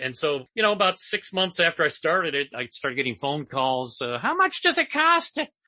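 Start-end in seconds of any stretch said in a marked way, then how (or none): 4.0-5.4 put-on very high, wealthy old-lady dowager voice. Retelling phone calls about advertising on the blog, in a wealthy dowager voice. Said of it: "The only female voice I can do".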